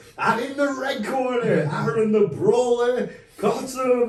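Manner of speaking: very loud, very high, over-the-top, drawn-out ring announcer voice. Retelling how someone announced him with knuckles to his face, Bruce Buffer ring announcement. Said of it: "He does the Bruce Buffer, but a thousand times over".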